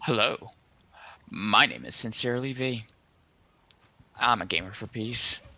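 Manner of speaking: radio announcer voice. Introducing oneself at the start of a stream: announcer voice. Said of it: "You got such the announcer voice".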